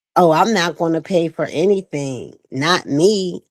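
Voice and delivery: put-on smug, entitled tone, slow and arrogant. Mocking someone who refuses to pay: imitating someone arrogant. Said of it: "very arrogant and shit".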